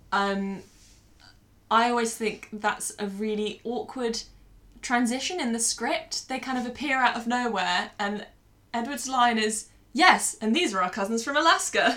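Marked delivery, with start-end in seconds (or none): 9.9-11.9 robotic delivery. Podcast co-host mocking an awkward script transition, doing a robotic Edward line delivery. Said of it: "really robotically".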